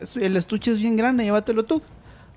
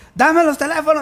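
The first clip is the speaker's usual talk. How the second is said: loud, high-pitched shouting; 9 semitones higher, 7 dB louder than usual. Retelling how a man demanding the phones began yelling at her, retelling a man's shout. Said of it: "me empezó a gritar".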